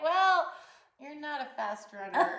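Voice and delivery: put-on high laughing voice, spoken through laughter. Retelling teasing a friend who just ran beside the car: laughing while talking. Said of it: "I'm laughing, like".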